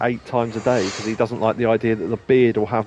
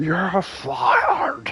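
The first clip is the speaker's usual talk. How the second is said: very high, swooping delivery; 13 semitones higher than usual. Imitating how Vince McMahon fires people, quiet Vince McMahon impression. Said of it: "like Vince McMahon when he fires people".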